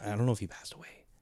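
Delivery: hushed whisper. Wondering aloud whether an older football player has passed away: whispering. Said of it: "I don't know why I whispered that just now".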